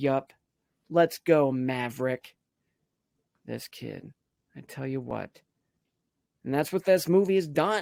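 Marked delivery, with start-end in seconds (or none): 0.0-2.4 slow, utterly earnest, dead-serious delivery. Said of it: "he was dead serious".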